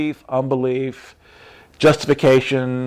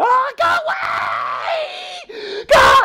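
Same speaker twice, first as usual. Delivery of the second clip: very high, very slow, rising, drawn-out shrieks. Speaker retelling how they screamed when something appeared: retelling screaming 'go away'. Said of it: "And I'm screaming".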